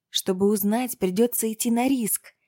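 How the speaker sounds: normal talking voice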